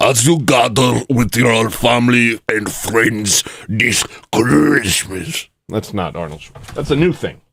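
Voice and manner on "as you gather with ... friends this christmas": put-on Israeli accent, higher, slow, words dragged out. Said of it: "That's my B B impression".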